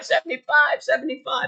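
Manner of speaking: play-acted, very high-pitched shrieking. Speaker complaining about news talking heads, imitating them mock-screaming. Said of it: "talking heads on the news started screaming 75".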